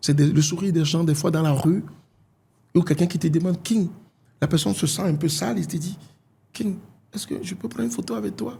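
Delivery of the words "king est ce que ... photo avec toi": tiny, soft, high little voice. Recounting someone in the street asking for a photo: imitating a small voice. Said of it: "avec une petite voix".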